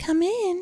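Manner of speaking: sickly sweet, very high, sugary voice. Reading a story aloud, a character calls someone in: sugary voice. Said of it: "in a sugary voice".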